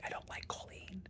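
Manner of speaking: hushed whisper under the breath, very quiet. A patient admits disliking one of the nurse practitioners; whispering. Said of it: "I don't know why I'm whispering".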